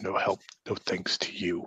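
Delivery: soft grumbling mutter under the breath. Narrating a game scene, a character answers Slick Charlie: muttering under his breath. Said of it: "Kind of mutters under his breath".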